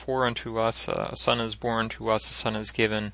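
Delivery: ordinary delivery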